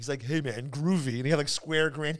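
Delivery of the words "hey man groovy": groovy beatnik monster voice. Retelling a TV scene where the zapped monster turns beatnik: beatnik Frankenstein monster voice. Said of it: "he became a beatnik Frankenstein".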